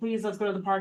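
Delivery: put-on childlike pleading, begging. Retelling how the kids asked to go to the park: imitating kids begging. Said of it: "the kids were begging me".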